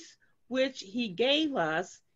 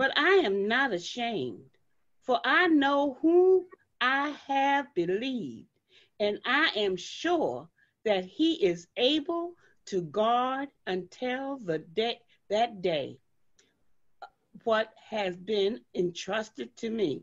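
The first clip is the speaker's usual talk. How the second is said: very slow reading in a Southern accent. Reading a passage aloud: Southern accent. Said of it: "I'm hearing something of a Southern accent in your reading".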